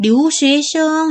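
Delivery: high, level first tone on 生. Chinese tone lesson in korean, 留学生: high level first tone on 生. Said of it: "이렇게 일성이 됩니다".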